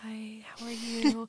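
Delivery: slow, soft, hushed half-whisper. Retelling how people talked at the spa: imitating a half-whisper. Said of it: "talking, like, in a whisper".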